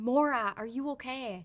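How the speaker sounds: play-acted slow, tearful, anxious crying voice. Retelling a late-night phone call, imitating someone crying. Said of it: "she was crying and she was going".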